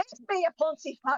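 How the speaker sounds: put-on very high, loud taunting yell with slight Scottish accent. A player's character, too far for a mental link, calls out to a foe, yelling. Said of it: "I'm gonna yell".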